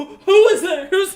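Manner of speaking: high, very loud, terrified shouting. A character hears a voice in his head and looks around: terrified. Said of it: "completely terrified".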